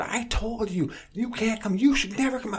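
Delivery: mock high female scream. Retelling a woman in a key shop screaming at the lock guy: imitating a woman screaming. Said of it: "just screaming at this".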